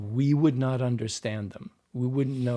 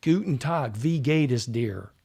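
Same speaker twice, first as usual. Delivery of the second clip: put-on German words said with an American accent; 3 dB louder than usual. Explaining why accents sound off, imitating an american in germany, american accent speaking german. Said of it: "an American in Germany trying to say".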